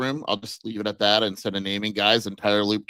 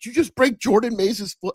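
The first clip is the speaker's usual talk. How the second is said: completely fake, joking shout, pitched way up, swooping; 13 semitones higher than usual. Retelling how someone yelled at him as a joke in front of the press, a fake yell. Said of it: "Reynolds yells out as a joke".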